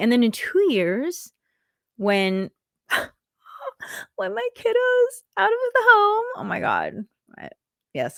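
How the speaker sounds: very high, choked-up voice, tearing up near tears. Speaker imagines their kid leaving home, tearing up. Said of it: "I'm I'm tearing up just thinking about it".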